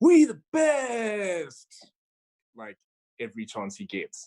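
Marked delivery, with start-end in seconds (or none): 0.0-1.9 slow, high, loud shouting. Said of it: "famous for shouting".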